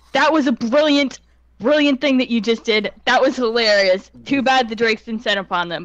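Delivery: acted, loud, high, admonishing scolding yell. Playing Naivara turning around after the kobold's scream, Naivara yelling. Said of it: "yell in common".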